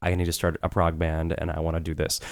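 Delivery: normal talking voice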